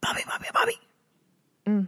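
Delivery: harsh whispered voice. Speaker imagines how a movie ghost might call a name, in a harsh whisper. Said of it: "that harsh whisper".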